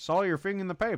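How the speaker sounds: transatlantic accent. Showing how a transatlantic accent sounds for a script: transatlantic accent. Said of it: "Like this, you know?".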